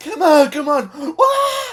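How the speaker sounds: very high, very slow, drawn-out yell. Retelling a movie scene where he yells at Tom, imitating Samuel L. Jackson yelling. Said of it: "He's like yelling at Tom".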